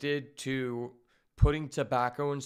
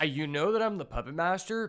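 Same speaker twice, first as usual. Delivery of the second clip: ordinary talk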